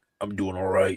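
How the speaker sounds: low, soft, super deep voice. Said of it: "that's how he would talk".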